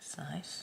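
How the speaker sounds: soft, unvoiced, whispered aside.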